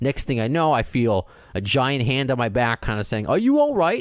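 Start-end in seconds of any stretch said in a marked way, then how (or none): 3.3-4.0 badly butchered New Zealand accent, very high. Retelling what someone asked with a hand on the back: butchered New Zealand accent as Alan. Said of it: "New Zealand accent, which I just butchered".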